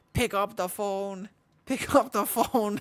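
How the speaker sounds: very high, strident, loud alien creature voice. Speaker imitates their own phone ringtone, in a Dalek voice. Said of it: "in the Dalek voice".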